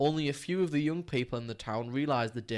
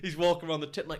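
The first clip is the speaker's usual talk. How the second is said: usual speaking voice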